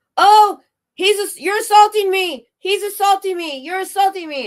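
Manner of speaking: very high, loud, hysterical fake wail. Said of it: "and he goes".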